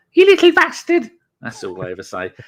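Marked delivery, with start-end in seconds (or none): 0.1-1.0 very high, loud, shrill voice at full blast. Showing how they always imitate mum: imitating mum's accent. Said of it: "I always do my mum's when she's here".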